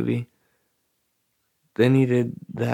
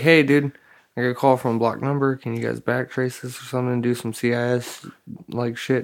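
ordinary talk

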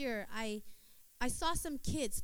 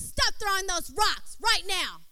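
loud, stern, no-nonsense mother voice; 8 semitones higher, 11 dB louder than usual. Retelling telling boys to stop throwing rocks: retelling using a stern mama voice. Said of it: "I had to get the mama voice out".

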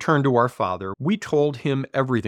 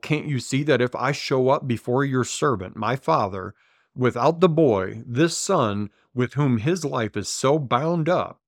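plain

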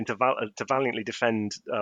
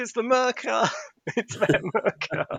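very high, long-stretched, drawn-out shout; 12 semitones higher than usual. Retelling how Janet shouted when the Morlocks appeared: imitating Janet shouting. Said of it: "Janet shouts".

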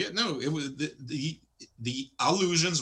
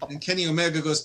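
plain

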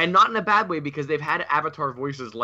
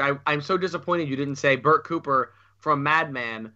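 ordinary talk

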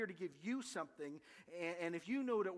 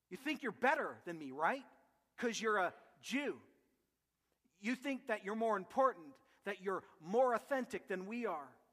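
acted, bitter, sarcastic tone full of anger. Retelling the woman's retort at the well: acting out sarcastic anger. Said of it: "sarcastically, full of anger, she says".

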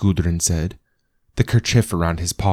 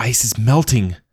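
gasping, much higher pitch; 5 semitones higher than usual. A narrator reads the line of a woman creeping along above the water, gasping. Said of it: "She gasped".

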